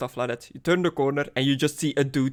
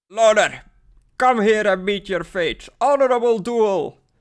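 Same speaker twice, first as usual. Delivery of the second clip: put-on drunken, loud, pitched-up bellow; 7 semitones higher, 5 dB louder than usual. Voicing a dwarf shouting outside for a duel, drunken shouting. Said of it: "drunkenly shouting outside".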